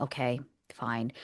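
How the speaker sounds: mock grudging, unwilling, reluctant. Retelling a woman's reply when asked to move: imitating a begrudging reply. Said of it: "begrudgingly went".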